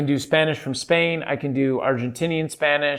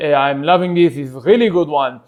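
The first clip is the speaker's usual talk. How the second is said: English spoken with an Israeli accent; 3 dB louder than usual. Demonstrating accents, now doing an Israeli one: Israeli accent. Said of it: "This is me doing a Israeli accent".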